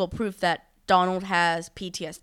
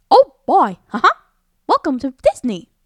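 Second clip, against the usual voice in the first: put-on high cartoon mouse voice; 8 semitones higher, 12 dB louder than usual. Challenged to prove they can do it, doing a Mickey Mouse voice. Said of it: "I can do Mickey Mouse".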